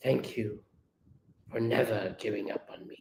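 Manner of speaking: hushed, quiet, soft, low-key voice. Acting out Starscream thanking Alexis: quiet voice as Starscream. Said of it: "Starscream quietly to Alexis".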